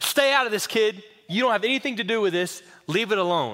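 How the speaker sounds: acted-out, very agitated, dismissive man's voice. Retelling how an angry customer told someone to stay out of it: imitating an agitated man. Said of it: "very agitated".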